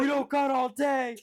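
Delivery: very high, loud holler. Acting out what a man yelled back at people, retelling a yell. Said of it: "turn back and yell".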